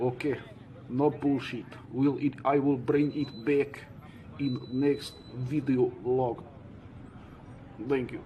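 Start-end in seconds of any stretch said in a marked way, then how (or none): 1.9-6.4 slow, fake Russian accent. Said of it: "your fake Russian accent".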